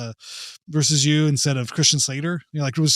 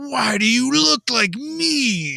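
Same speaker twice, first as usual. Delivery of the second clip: mock unhinged, over-the-top movie delivery, higher; 9 semitones higher than usual. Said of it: "just acting crazier and crazier".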